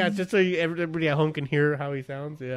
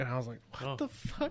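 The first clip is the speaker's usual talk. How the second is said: usual speaking voice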